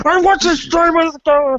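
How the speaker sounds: put-on voice talking through a mouth full. You imagine Godless speaking with a bunch of popcorn in her mouth; do Godless with a mouthful of popcorn. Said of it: "with like a bunch of popcorn in her mouth going".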